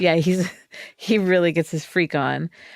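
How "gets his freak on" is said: ordinary talk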